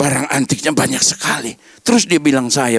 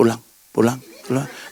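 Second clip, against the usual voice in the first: hushed, gentle, soft and quiet repeated words; 2 semitones lower, 3 dB quieter than usual. Sermon showing how not to cast out demons: soft, quiet voice. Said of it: "bukan suara pelan-pelan".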